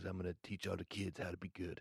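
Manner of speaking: very hushed put-on voice, almost under the breath. Retelling how a podcast guest talked, soft non-threatening tone: Nick Yaris impression. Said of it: "that's my Nick Yaris impression".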